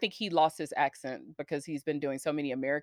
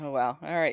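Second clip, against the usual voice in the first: ordinary delivery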